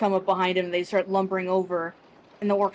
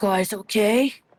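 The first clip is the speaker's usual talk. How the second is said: rough, rasping voice. Recounting a voice that came from behind the group, raspy voice. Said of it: "like a raspy voice behind you guys".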